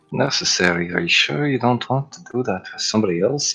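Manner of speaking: soft, half-whispered stage whisper. Speaking in character to a companion at a table: half-whispering in character. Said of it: "He's whispering this, by the way".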